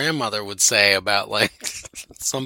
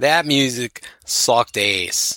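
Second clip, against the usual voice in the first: Delco Valley regional accent. Complaining about the music, the speaker repeats it in a Delco Valley accent. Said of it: "I'm going to say it with a Delco Valley accent".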